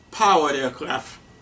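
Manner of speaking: clear stress on the word powered. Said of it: "I really emphasized the word".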